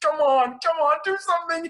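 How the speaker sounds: acted, very high, tearful pleading near-sobs. Retelling a trapped character pleading for help: imitating someone crying and begging. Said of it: "He's essentially, like, crying, like, asking and begging".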